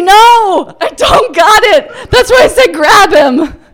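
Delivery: panicked shout, high and loud.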